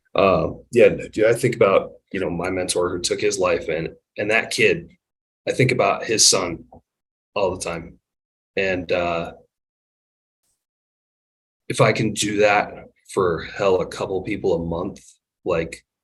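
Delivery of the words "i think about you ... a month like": emotional, choked-up voice holding back tears. Talking about a mentor who took his life: choked up. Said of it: "I'm trying not to get choked up about it".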